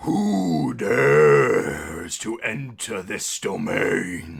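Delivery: deep, booming, monstrous water creature voice. Narrating the scene, voicing the water creature as it turns to you: deep creature voice. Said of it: "And with a deep voice, it goes".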